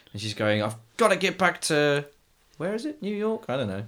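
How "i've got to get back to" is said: put-on woman's shout, higher. Retelling a film scene where a mother shouts at a desk: imitating a woman shouting. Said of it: "Screamy Shouty Woman is at the".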